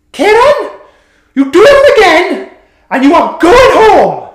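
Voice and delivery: put-on strong Welsh accent, shrill, very loud, high scream. Retelling a woman leaning across and screaming at Kieran: screamed in a Welsh accent. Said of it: "That was me trying to do Welsh".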